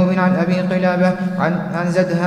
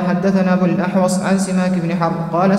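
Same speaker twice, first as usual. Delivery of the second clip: ordinary talk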